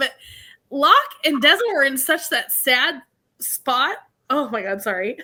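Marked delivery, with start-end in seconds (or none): 0.0-4.0 slow, tearful voice, crying through the words. Talking about locke and deza's sad scene: starting to cry. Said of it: "I didn't mean to like start crying".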